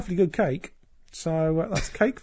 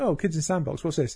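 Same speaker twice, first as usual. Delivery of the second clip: ordinary delivery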